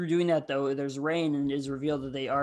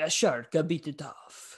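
put-on heavy Italian accent, slow pace. Describing Massimo answering Alberto and Luca about his missing arm, in Italian accent. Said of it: "he says in like an Italian".

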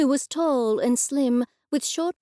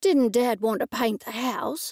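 plain

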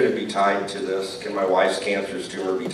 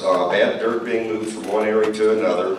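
ordinary talk

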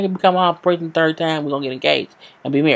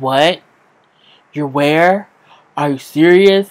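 put-on angry, upset voice; 4 dB louder than usual. Retelling a man's reaction on the phone: imitating someone mad. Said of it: "And he's mad".

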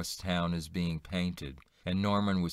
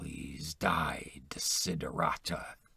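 close, confidential, secret-like whisper; 3 semitones lower, 3 dB quieter than usual. Leaning close, the narrator speaks into a woman's ear, whispering. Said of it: "I whispered in her ear".

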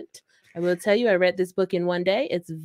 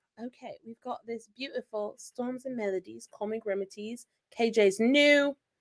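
soft, put-on British accent, fully in character; 6 dB quieter than usual. Asked by the host to show everybody tonight's prize, in a British voice. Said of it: "Use your British voice".

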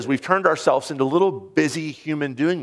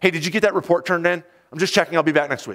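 acted-out repetitive phone-style chatter; 3 semitones higher than usual. Retelling a woman on a plane phoning coworkers, imitating loud phone talk. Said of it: "She was saying it very loudly".

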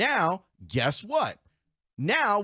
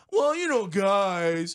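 sorrowful voice. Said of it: "I'm gonna do the Tony Gill sad voice".

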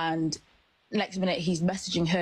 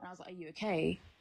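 normal talking voice

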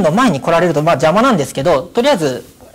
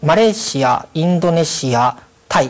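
careful, distinct enunciation, each name set apart. Describing where they have worked, slower on the country names. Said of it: "今のマレーシア、インドネシア、タイのところでスピードを落としてます".

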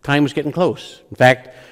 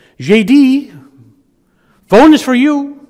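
high, slow, bad Latin American accent; 12 semitones higher, 7 dB louder than usual. Retelling a phone call, the speaker imitates Sigrid calling J.D. to the phone. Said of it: "Terrible accent, I know, but I'm trying my best here".

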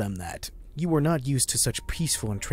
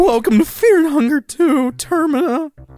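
very high, very loud, voice cracking midway; 14 semitones higher, 11 dB louder than usual. Redoing the show intro as directed, voice crack partway through. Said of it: "a little bit of a voice crack partway through".

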